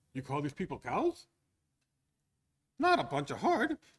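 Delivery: put-on Yiddish accent. Doing a joke dialogue with a partner, playing the bit in a Yiddish accent. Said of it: "you have to do this in a Yiddish accent".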